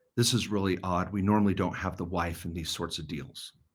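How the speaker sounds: put-on muttering under the breath. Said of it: "said under his breath".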